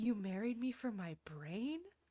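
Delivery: stunned, shocked disbelief. Retelling a scene where a wife learns why she was married: imitating a shocked character. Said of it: "looks at him all wide-eyed and, like, shocked".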